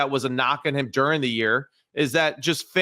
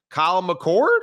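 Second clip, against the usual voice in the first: put-on voice crack on one word; 4 semitones higher, 4 dB louder than usual. Naming a player to the other speaker, with a fake voice crack. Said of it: "Did your voice just break?".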